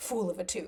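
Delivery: giggly, laughing delivery through the words. Retelling a shared joke and quoting the line: imitating giggling while talking. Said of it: "we were just giggling and going".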